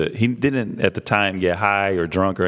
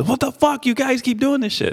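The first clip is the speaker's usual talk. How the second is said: mock very high, shrill screaming outburst. Retelling how the store clerk screamed at him: imitating a man screaming. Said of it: "dude's screaming at me".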